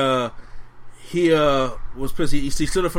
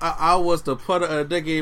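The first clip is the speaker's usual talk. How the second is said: ordinary delivery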